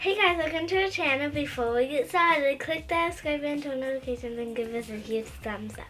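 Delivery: rattled-off, rushed, way too fast delivery. A girl doing her mom's channel intro for her: way too fast. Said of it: "That was way too fast".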